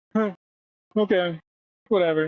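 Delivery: totally indifferent, nonchalant, unbothered tone. Imitating Bill Murray told the world will end: nonchalant Bill Murray impression. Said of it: "he'll be nonchalant".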